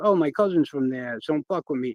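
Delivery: ordinary delivery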